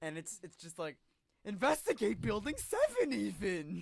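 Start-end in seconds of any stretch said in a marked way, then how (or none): 1.4-3.8 booming, drawn-out, slow voice sweeping up high. Joking that the cartoon character is a truther: Snagglepuss voice. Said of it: "Snagglepuss is a nine eleven truther".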